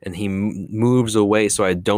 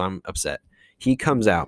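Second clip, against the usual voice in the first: plain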